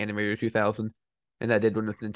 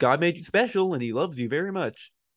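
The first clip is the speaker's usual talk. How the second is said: slightly higher-pitched, throaty voice; 7 semitones higher than usual. Comparing impressions with another speaker, showing their own attempt: Bob impression, higher and throaty. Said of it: "a little higher and more in my throat".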